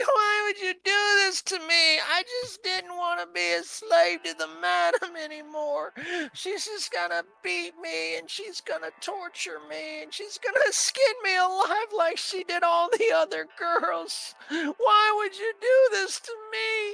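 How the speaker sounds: sobbing, pleading voice. She curls up in a ball on the floor and pleads: crying while pleading. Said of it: "and just starts crying".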